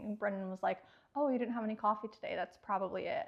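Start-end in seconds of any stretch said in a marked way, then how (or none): 1.1-3.3 imitated cavalier, offhand, casual tone. Retelling someone's remark on a plane, mimicking a cavalier tone. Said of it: "Just the way he said it was so cavalier".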